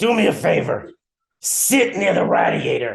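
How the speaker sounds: rough, rasping growl. Retelling what he told you when you were twelve, in a raspy voice. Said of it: "in this like raspy voice".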